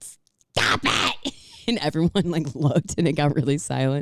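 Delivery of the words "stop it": mock scolding yell, loud and public-sounding. Recalling siblings fighting in a Niagara Falls gift shop: imitating mom yelling. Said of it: "and my mom went".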